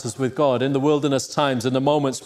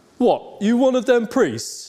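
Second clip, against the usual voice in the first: acted, very high, slow, deliberate antagonistic tone; 10 semitones higher than usual. Retelling what a barber said to a minister: imitating an antagonistic barber. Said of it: "really antagonistic, wanting to start a fight".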